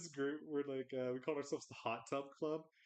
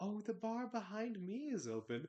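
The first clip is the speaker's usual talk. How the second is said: put-on creepy giggly voice, higher; 6 semitones higher than usual. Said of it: "creepy giggle".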